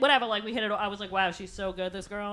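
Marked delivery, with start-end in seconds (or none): none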